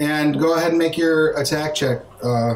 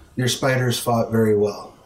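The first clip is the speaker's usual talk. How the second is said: whispered close to the ear; 5 semitones lower than usual. Voicing a character who opens his eyes and speaks into a player's ear: whispering. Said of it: "Opens his eyes and whispers in your ear".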